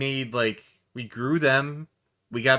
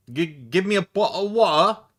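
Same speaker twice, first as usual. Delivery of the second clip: put-on Cockney accent, London street style, pitched up; 6 semitones higher, 4 dB louder than usual. Speaker trying out British voices, Cockney accent. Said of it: "got the Cockney accent going on".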